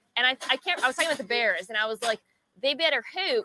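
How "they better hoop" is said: put-on Delco, Delaware County Pennsylvania accent. Retelling own past line from a video: Delco accent. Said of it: "it's now leaking into my takes".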